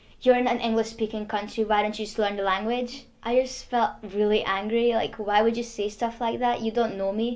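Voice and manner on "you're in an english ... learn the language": plain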